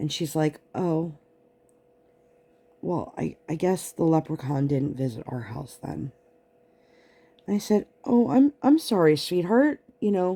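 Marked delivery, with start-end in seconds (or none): 0.7-6.1 mock sad, somber tone, much quieter. A mother retells her child's words after she came out of the kitchen, imitating a sad, somber voice. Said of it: "She's now super sad and somber".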